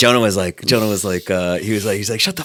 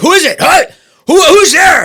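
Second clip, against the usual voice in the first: mock suspicious yelling, much higher and louder; 9 dB louder than usual. Explaining their reaction to a knock on their door, acting out suspicious yelling. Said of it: "Like I'll start yelling".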